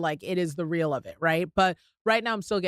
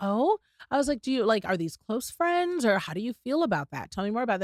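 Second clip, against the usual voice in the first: put-on gentler tone, much higher; 4 semitones higher than usual. Retelling a talk with a girl about her friends, quoting a toned-down question. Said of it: "I scaled it back".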